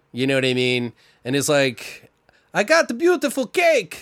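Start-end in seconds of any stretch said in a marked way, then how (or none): 2.6-4.1 put-on failed German accent, very high pitched. Telling a story about a cake order, speaker uses a bad german accent. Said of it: "This is my best German accent".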